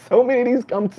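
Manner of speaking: laughing while talking. Criticising church clichés about debt demons, laughing while talking. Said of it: "I know I'm laughing".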